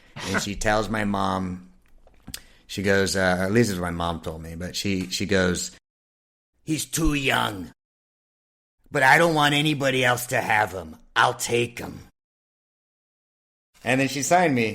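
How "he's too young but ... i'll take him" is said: rough, raspy chain-smoker voice. Retell what Iris told your mom while smoking a cigarette, imitating Iris's raspy voice. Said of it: "with this like raspy voice".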